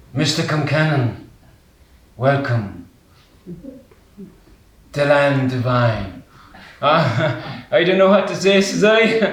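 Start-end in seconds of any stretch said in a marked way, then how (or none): 0.2-6.3 hushed, very quiet, low voice. Retelling how a silent man standing beside him finally greets him, very quiet voice. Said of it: "and a very quiet voice".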